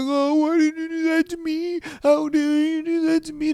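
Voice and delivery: very high-pitched, blubbering, whiny crying. Imitating a boyfriend after his girlfriend cheats: imitating someone whining and crying. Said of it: "He's gonna whine and he's gonna cry".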